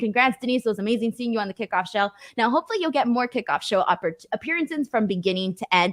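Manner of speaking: plain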